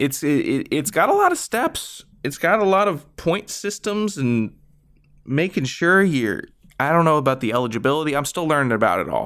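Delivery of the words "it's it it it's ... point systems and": excited and much higher pitch. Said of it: "I'm excited".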